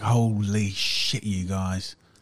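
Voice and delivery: slow, shaken voice straining to sound tough.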